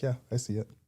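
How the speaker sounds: grudging, half-hearted, unenthused tone. Retelling a house viewing, quoting the husband: imitating a reluctant husband. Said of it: "very visibly did not wanna be there".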